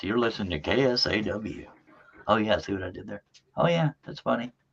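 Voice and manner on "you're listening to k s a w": mock radio presenter delivery. Showing off their radio voice, a put-on radio announcer voice. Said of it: "This is my radio voice".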